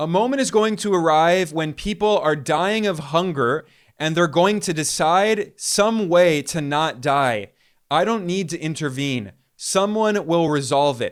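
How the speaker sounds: ordinary delivery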